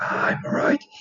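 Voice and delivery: whispering in put-on voice. Speaker shows how he will do a character's voice, whispering more. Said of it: "I think I'll like whisper more".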